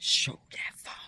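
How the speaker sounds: very hushed, barely voiced, secretive whisper. Quoting what she whispered to him before she left: retelling her whisper. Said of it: "but she kind of whispers".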